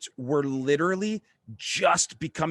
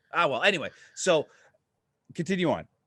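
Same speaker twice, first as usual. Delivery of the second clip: plain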